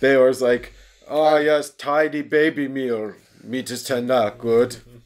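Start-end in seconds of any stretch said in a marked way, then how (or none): 1.1-4.8 put-on Austrian accent. Voicing another player's character Beor at the table: Arnold Schwarzenegger accent. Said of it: "you think I'm Arnold Schwarzenegger".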